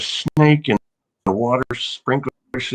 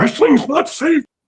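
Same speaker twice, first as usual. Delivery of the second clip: mock very high-pitched freaked-out shrieking scream; 4 dB louder than usual. Retelling how their mother freaked out at them: imitating mom screaming. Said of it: "she'd freak out and scream at me".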